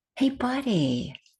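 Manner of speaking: soft, gentle, welcoming, inviting tone. Voicing Bill's caring inner voice that invites him into the moment, gentle inviting voice. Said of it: "a voice that invites him into the moment".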